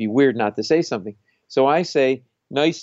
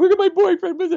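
put-on crying, much higher and louder; 5 dB louder than usual. Retelling a bar stabbing before his set, imitating the victim's girlfriend crying. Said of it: "his girlfriend's crying".

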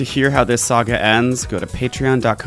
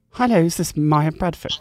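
slight put-on British accent, much higher pitch; 5 semitones higher than usual. Caller posing as Teresa from a store, put-on British accent. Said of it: "I'm a bit British".

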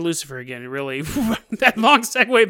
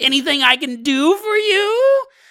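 put-on very high, slow, drawn-out demonic nerd voice; 9 semitones higher, 4 dB louder than usual. Voicing a spirit that appears in smoke and tips a hat: demonic Urkel voice. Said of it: "And he sounds like a demonic Urkel".

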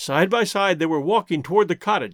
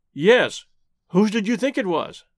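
ordinary delivery, nothing marked

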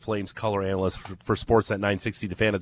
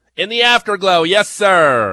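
very high, loud broadcaster voice, stretching sir; 9 semitones higher, 9 dB louder than usual. Asked to do the voice, quoting a post-game line: Jerry Howarth impression. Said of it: "That's my Jerry Howarth".

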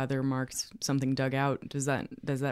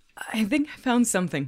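shaky breaking voice, much higher; 8 semitones higher, 5 dB louder than usual. A character announces a find while digging at a mound, in a broken, shaky voice. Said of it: "in a bit of a broken, shaky voice".

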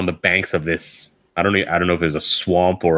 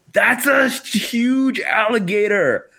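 put-on, high, full-lunged yell at the top of the lungs. Recounting a moment in a Floridian swamp, retelling her yell at the top of her lungs. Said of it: "she yells at the top of her lungs".

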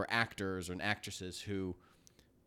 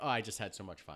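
ordinary talk, nothing marked

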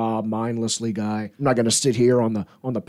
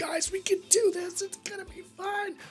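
high, hushed, encouraging whisper. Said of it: "I don't wanna have to whisper".

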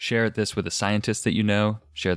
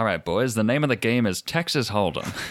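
put-on old-timey gangster voice; 2 semitones higher than usual. Podcast host closing out the episode, old-timey gangster poker dealer voice. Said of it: "In my like old-timey gangster poker dealer voice".

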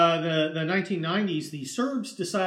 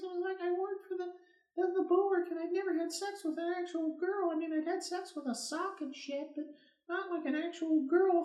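tiny, squeaky, very high-pitched little voice; 11 semitones higher, 9 dB quieter than usual. Showing how a faulty microphone made the speaker sound, little high-pitched voice. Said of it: "like this in a little high-pitched voice".

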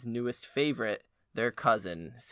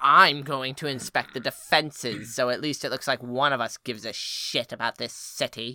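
mock stuck-up, snobby, haughty, disdainful delivery; 2 semitones higher than usual. Retelling a book scene, quoting Cersei's reply: snobby Cersei impression. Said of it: "she gets all snobby and she's like".

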